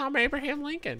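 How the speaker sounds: very high, irritating, grating put-on voice. Imitating an actor playing Abraham Lincoln: high annoying Abraham Lincoln voice. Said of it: "he's just talking like this".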